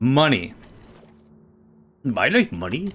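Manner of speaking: poorly done cartoon crab voice. Handing items over in a game, doing a Mister Krabs impression. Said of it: "my best, uh, Mister Krabs impression".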